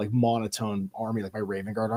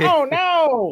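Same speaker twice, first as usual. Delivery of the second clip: fake screaming crab man voice, higher and louder; 5 dB louder than usual. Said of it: "He's screaming".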